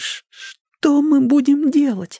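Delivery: trembling, shaky, quavering whisper. Narrating a story, a character near the robbers' cave asks what to do, trembling whisper. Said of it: "прошептал дрожащим голосом".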